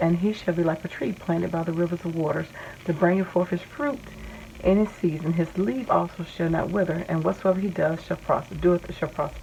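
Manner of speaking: normal talking voice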